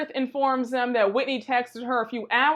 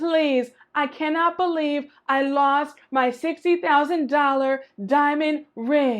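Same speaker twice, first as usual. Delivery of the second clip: frantic, panicked, freaking out, losing it; 2 semitones higher than usual. Acting out a woman who lost her ring in a restroom, imitating someone freaking out. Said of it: "she is freaking out".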